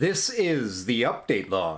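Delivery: very slow, loud, drawn-out enthusiastic DJ announcer voice. Showing how the update log intro should be said, with more gusto. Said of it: "you gotta say that with, with more gusto".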